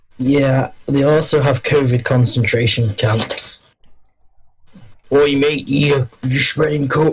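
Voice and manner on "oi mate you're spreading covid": bad, failed fake Australian accent. Joking about Australia in conversation, say it in a bad Australian accent. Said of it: "I can't do Australian".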